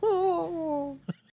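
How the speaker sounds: very high, squeaky creature voice. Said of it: "So he says".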